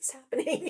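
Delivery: high, whispered voice full of disbelief. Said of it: "I'm like".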